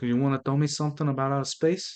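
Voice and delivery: exaggerated put-on Italian accent. Joking with another speaker about a soprano: Marlon Brando impression. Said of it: "That was more Marlon Brando".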